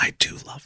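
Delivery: soft, hushed whisper. Admitting, between you and me, to loving Olive Garden breadsticks, whispered. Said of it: "I'll go ahead and whisper it".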